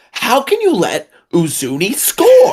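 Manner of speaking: very high, slow, stretched-out, swooping whine. Doing an impression after a goal conceded: Jeremy Peterman impression. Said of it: "let me do a Jeremy Peterman impression".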